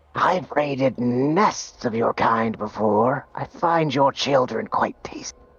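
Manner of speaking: hissing, taunting reptilian creature voice. Voicing a snake just hit by a crossbow bolt: snake voice. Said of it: "it looks at you and goes".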